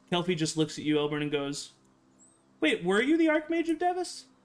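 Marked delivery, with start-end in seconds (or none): 2.6-4.2 innocent-sounding, pitched up. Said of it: "in the most innocent way".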